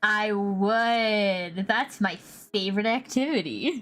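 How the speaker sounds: very slow sarcastic drawl, "would" drawn out. Answering a teasing remark about staying at the base, sounding sarcastic. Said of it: "That sounded sarcastic".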